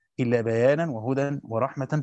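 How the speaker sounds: plain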